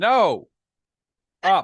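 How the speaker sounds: loud, high-pitched yell. Yelling in character at a ship lowering itself down: in-character yell. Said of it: "I'm going to yell".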